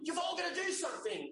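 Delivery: high-pitched shout. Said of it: "just yells out".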